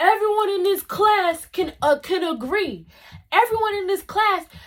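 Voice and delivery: mock angry outburst. Quoting a classmate going off at the speaker in class, retelling an angry rant. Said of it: "as he's going off".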